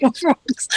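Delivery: speaking through laughter. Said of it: "now I'm laughing".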